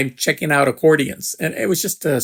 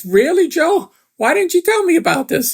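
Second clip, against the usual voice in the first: put-on heavy Italian accent, pitched very high; 3 dB louder than usual. Retelling Benny's reply in the story, in a thick Italian accent. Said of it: "in this thick Italian accent".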